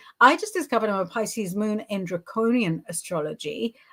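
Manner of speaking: normal talking voice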